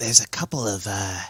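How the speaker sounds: hushed half-whisper, under the breath. Game master speaking as Zav, who points something out to the players, half-whispering. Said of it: "I don't know why I'm whispering".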